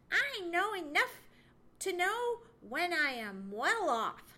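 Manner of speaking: retorting tone, pitched high. A character answers someone planning to build a new home, retorting. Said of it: "retorted Chatterer".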